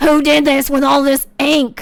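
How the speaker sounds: rasping, cigarette-worn raspy smoker's voice. Retelling a stepmom finding ink all over the house: raspy smoker's voice. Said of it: "who had this like raspy cigarettes voice".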